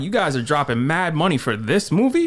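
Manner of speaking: usual speaking voice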